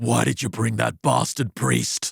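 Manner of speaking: hideous, horrible, creaky, rough possessed demon rasp. Retelling a possessed woman springing up as the priest walks in: horrible bellowing demon voice. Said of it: "in that horrible voice, bellows out".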